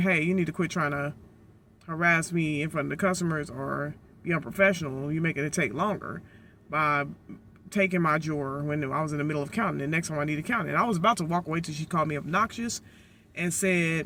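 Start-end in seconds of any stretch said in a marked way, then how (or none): none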